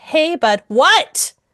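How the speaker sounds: snapped, annoyed "what".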